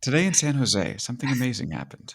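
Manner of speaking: public radio news feature anchor delivery. Introduced as the show's special correspondent, the speaker uses a mock NPR voice. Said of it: "who will speak to you in Big Technology voice".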